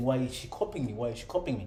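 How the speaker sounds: normal talking voice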